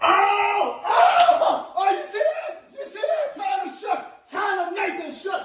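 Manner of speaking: wild, high, loud, whooping celebration.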